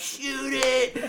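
high, screaming acted-out yell. Speaker retells yelling at him during a hunt, retelling a yell. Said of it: "he hears me yelling".

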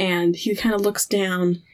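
normal talking voice

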